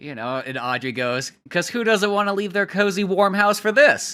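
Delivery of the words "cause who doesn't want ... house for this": put-on heavy sarcasm, loud and pitched up. Retelling a character's line about leaving a cozy house: imitating a sarcastic remark. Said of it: "Sarcastically and so on".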